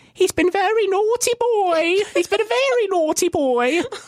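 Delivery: put-on shrill, very high old lady voice. Explaining a comedy genre to listeners, the speaker does the Monty Python old lady voice. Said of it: "the famous old lady voice from Monty Python".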